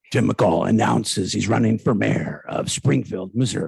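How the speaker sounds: deep, loud radio announcer voice with a rough edge. Announcing the other speaker's run for mayor, in a deep radio DJ voice. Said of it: "with the deep radio D J voice".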